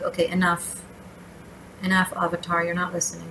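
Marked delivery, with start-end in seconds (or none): none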